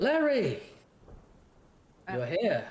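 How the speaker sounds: high, giggly, sing-song, teasing woman's voice. Voicing a mysterious voice in the mist calling a player: giggling teasing woman's voice. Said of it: "almost like a woman, giggling and laughing. Teasing you".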